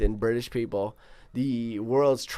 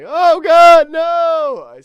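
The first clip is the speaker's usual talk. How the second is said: shrill, loud, panicked shriek with no stretched out; 15 dB louder than usual. Showing how they sound when panicked: shitty Seinfeld voice. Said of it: "I sound like fucking shitty Seinfeld".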